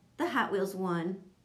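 ordinary delivery

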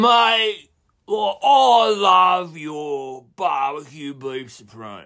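mock spaced-out, stoned, very slow drawl. Retelling a phone order from a caller who was baked: imitating a stoned caller. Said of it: "He was clearly baked".

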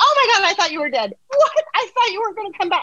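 very high, squealing, screaming dog voice. Retelling a dog greeting its owner after days apart: imitating a screaming dog.

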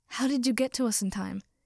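ordinary delivery

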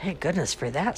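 said with a sigh. Chester responds after Miss Bilberry exclaims over the house, sighing. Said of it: "sighed Chester".

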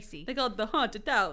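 hammy, campy, spooky vampire voice. Two speakers joke about a haunted house, Count Chocula voice. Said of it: "Why do I sound like Count Chocula?".

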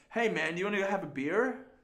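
put-on Australian accent blended with Canadian accent. Imitating a friend's mixed accent: imitating Peter's Canadian Australian accent. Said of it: "that's how Peter sounds".

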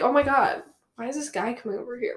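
ordinary talk

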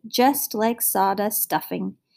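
ordinary delivery

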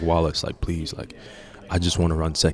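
put-on pleading tone. Retelling asking the coach to run second leg: retelling own begging. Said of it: "I was begging Wallace".

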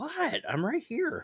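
play-acted indignant voice, very high and drawn out. Imitating a distracted gamer who answers when called: indignant reply. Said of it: "he has that kinda indignant".

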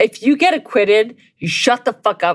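enraged, furious tone. Ranting about a director who was acquitted, furious. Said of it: "I'm so fucking angry".

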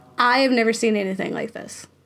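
plain

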